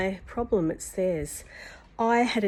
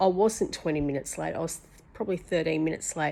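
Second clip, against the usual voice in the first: ordinary talk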